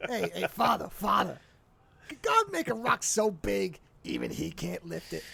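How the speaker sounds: put-on slow, drawling, real New York accent. Repeating the comedian's priest bit after the other speaker: George Carlin New York voice. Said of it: "in that real, like, New York voice".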